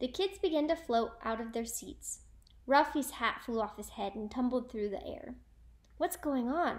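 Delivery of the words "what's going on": words gasped out on a breath. Narrator reads a kid's line as the class floats from their seats, gasped. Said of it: "Arnold gasped".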